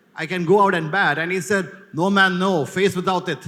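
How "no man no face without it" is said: put-on Jamaican, West Indian accent. Retelling a policeman's reply to a man asking for his helmet to bat, jamaican accent. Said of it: "It's a West Indian accent, Jamaican accent".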